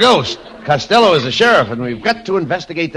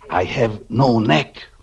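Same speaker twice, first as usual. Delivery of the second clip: hushed whisper, much lower pitched; 6 semitones lower than usual. In a comedy sketch, answering a remark about feeling a draft, whispering. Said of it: "what are you whispering for?".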